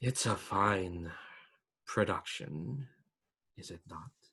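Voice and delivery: soft, deep rumbling voice, drawn out. As the commoners applaud a production, a voice speaks to Illyria, rumbling voice. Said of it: "this rumbling voice just go like".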